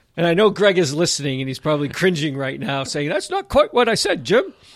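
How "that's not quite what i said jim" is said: high, silly, put-on British sketch voice. Host imagines a listener objecting to being quoted: imitating Greg. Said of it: "Why does Greg's voice sound like Monty Python?".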